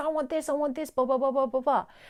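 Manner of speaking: put-on screaming child voice. Parenting advice, showing how a screaming, shouting child talks: imitating a screaming child. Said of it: "your child's most likely talking like this".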